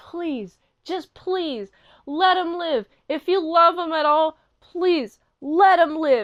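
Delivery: acted, earnest, begging pleading tone. Retelling an episode, father begging grandmother on phone: imitating a pleading father. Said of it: "pleading, like".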